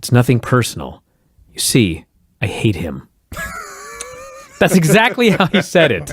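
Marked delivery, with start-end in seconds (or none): 0.0-3.1 mock sincere voice, lower pitched. Speaker explains why they laughed at a character's line, imitating Canyon's sincere tone. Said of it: "the sincerity with which he described".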